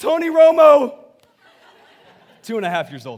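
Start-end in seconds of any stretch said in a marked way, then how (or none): 0.0-1.0 put-on shrill, very high, very loud toddler yell. Retelling how a two and a half year old yelled during hangman: imitating a child yelling. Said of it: "my son just yells out".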